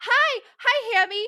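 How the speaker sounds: put-on very high little-kid voice, pitched way up.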